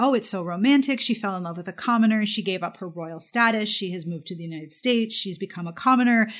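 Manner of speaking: usual speaking voice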